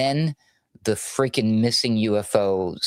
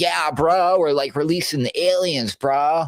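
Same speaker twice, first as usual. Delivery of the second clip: breezy, casual bro talk, pitched up; 7 semitones higher, 3 dB louder than usual. Retelling what a guest said on a TV show: mocking Kash Patel's bro talk. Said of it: "The guy really talks like that".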